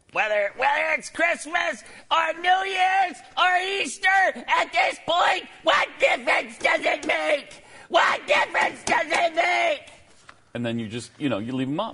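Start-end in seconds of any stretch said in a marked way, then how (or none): 0.1-9.8 high, slow, drawn-out shout. Quoting a politician to end a talk on decorations: Hillary Clinton impression. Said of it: "You're doing really well with that impression".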